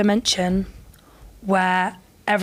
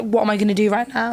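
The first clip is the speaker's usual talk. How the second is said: normal talking voice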